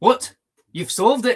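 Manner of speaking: put-on Irish-sounding accent, high and loud. Reading a detective story aloud, voicing the mayor's reply: Irish-sounding accent. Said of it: "The mayor accent sounds Irish".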